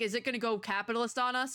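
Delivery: plain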